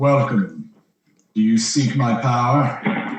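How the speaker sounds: voice pitched very deep, as low as possible. Game master voicing a figure in amber that a player touches, Yog voice, very deep. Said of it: "you hear like a very deep voice".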